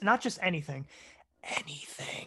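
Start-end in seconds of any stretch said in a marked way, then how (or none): 1.4-2.3 very soft ASMR whisper. Answering a co-host's invitation for listener questions: asmr whisper. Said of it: "did I do the A S M R whisper?".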